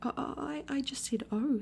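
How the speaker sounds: high, nervous, uneasy little voice. Reading a story aloud, a character repeats his answer to another character, nervously. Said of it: "said Piglet nervously".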